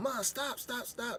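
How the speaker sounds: mock screaming and sobbing, very high, drawn out. Retelling yelling at mom to stop beating a woman: retelling a crying yell. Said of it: "I'm sitting there yelling at my mom".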